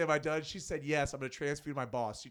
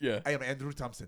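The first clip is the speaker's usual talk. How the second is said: usual speaking voice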